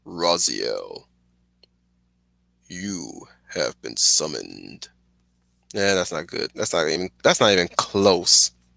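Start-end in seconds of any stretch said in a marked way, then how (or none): 0.1-4.9 very low, slow, creaky, rasping rumble. Thanking people, then attempting a game voice, in an Elder God voice. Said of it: "I'll try to do my uh, Elder God uh voice".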